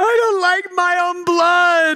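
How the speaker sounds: put-on high, slow, childish five-year-old scream.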